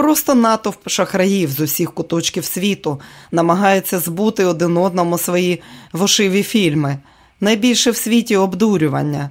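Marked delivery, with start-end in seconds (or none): none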